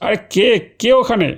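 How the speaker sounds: frightened shout. Woken at night, the narrator sees someone wrapped in a sheet: frightened shout. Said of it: "চেঁচিয়ে বললাম".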